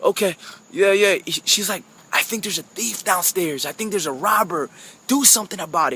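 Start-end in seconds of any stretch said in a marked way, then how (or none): 2.1-6.0 soft, hushed half-whisper. Retelling what a wife said to her husband in the night, half-whispering. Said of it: "And she's whispering".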